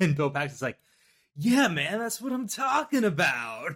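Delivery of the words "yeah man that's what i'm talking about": put-on high, swooping, hyped, eager movie actor voice. Quoting a film scene, imitating excited Bill Paxton. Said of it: "I love how excited Bill Paxton gets".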